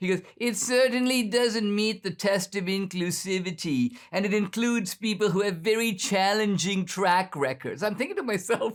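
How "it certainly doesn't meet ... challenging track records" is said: whiny, complaining, whined-out voice. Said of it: "the whiny voice".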